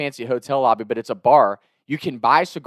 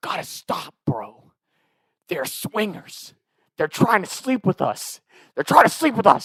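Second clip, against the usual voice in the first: put-on whisper, pitched higher; 5 semitones higher than usual. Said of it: "He's whispering it while I'm talking".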